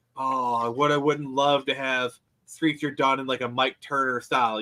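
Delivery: ordinary delivery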